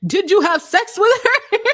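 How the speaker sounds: shrill, very high, very loud scream. Commenting on a man questioning another about serious allegations, imitating someone screaming. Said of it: "the way he's screaming at him".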